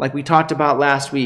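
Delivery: ordinary delivery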